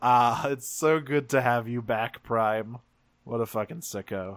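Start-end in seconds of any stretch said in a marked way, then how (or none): 0.0-2.8 put-on laughing villain voice. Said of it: "Megatron just starts laughing and says".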